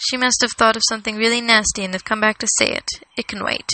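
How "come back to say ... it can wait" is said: ordinary delivery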